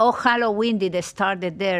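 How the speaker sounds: ordinary talk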